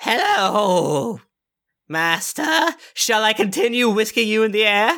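high-pitched creature voice. Voicing a charmed creature speaking to its new master: Piggles voice. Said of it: "it's looking at you and it says".

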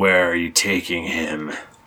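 sinister, menacing, threatening tone. Game narrator voices an unseen figure questioning the players: menacing voice. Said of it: "You hear a menacing voice say".

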